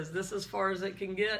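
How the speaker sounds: normal talking voice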